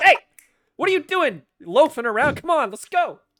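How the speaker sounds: shrill bark, very high and very loud. Voicing her yelling at the grungs in the crew: yelling extra hard. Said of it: "She yells extra hard at the grungs".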